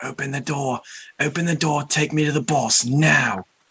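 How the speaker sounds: high, loud, in-your-face screaming. In a game, a character lands on an ogre's face, screaming at it. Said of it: "start screaming at him".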